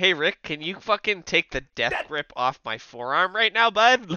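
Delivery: high, loud woman's voice. Imitating Miss Elizabeth asking Rick to let go of her arm: imitating Miss Elizabeth. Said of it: "Miss Elizabeth is just like".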